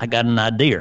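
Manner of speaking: put-on Boston accent, "idea" said as "idear". Showing a Boston accent that adds an R: Boston accent, extra R on idea. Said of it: "And then to put an R where it doesn't belong".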